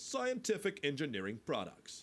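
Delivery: slightly forceful voiceover read. Practicing a voiceover for a fake ad, reading it slightly pushed. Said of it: "sort of a more pushing a little bit".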